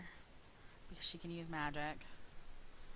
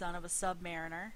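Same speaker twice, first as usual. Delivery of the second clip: plain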